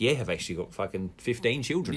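plain

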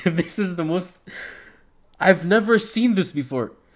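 words broken by laughter. Recapping a fighter riding away in an ambulance, laughing while talking. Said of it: "I'm sorry I'm laughing".

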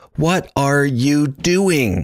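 high, very slow, every word enunciated separately. Retelling how a character says the line the second time, each word enunciated separately. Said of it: "almost like there's periods between each word".

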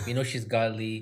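ordinary delivery

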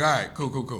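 plain

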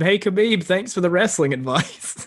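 mock shouted, yelled-out call. Retelling a line yelled out to Khabib during a fight: imitating someone yelling. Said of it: "he yelled out to Khabib".

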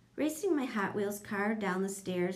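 ordinary delivery

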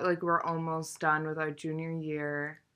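ordinary talk

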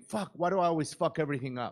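ordinary delivery

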